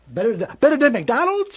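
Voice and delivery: put-on high, swooping, sing-song little kid voice. Retelling a comedy bit where a boy questions his mother: Eddie Murphy's little kid voice. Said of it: "he's using his little kid voice".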